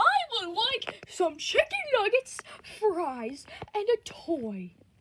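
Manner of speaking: very high, loud sing-song voice with bouncing pitch. Speaking as Freddy, in a very high-pitched Freddy voice. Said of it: "why is your voice so high pitch?".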